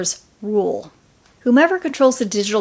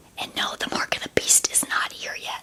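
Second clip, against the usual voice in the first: hushed, breathy whispered aside. Speaking to the audience of the show, suddenly whispering. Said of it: "I don't know why I'm whispering".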